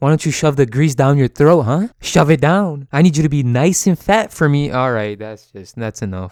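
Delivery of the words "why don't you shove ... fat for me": sinister, creepy put-on fairy-tale witch voice. Picturing her as an evil witch in a Disney movie: creepy evil witch voice. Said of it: "she could play an evil witch in one of these Disney movies ... I'm never doing that voice again".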